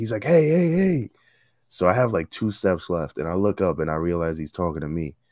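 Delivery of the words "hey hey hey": acted-out, high-pitched yelling to get attention. Speaker retells the captain calling out to them on the steps, retelling the captain's yell. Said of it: "the captain is yelling at me".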